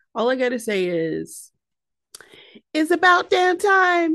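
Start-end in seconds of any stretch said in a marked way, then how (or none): 2.7-4.1 high, loud, belted put-on voice. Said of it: "in my [name] voice".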